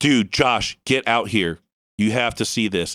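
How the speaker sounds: acted urgent, dead-serious tone. Retelling calling someone outside to see a UFO: retelling an urgent serious call. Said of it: "He knew from my tone of voice that I was not fucking around".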